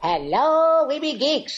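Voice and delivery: swooping, sing-song, up-and-down cartoon voice. Podcast co-host introduced as Yakko greets listeners, in a Yakko voice. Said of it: "And Yakko".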